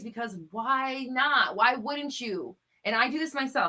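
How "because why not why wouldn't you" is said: slow, insistent, emphatic, pressing. Urging listeners to commit to good feelings daily, the speaker yells at themself. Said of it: "So I'm yelling at myself right now".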